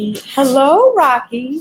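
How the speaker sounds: put-on high-pitched, cute, cutesy baby-talk tone. Trainer greets Rocky during training to reinforce him, in a cute tone of voice. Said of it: "That cute tone of voice".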